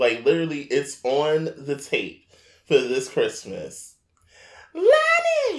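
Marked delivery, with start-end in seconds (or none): 4.7-5.6 very high, loud hollering mother voice. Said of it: "My mother on the camcorder".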